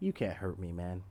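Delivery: sinister, very deep, very low voice. Retelling what a man said after striking his kicked hand, retelling in sinisterly deep voice. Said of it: "he had this sinisterly deep voice".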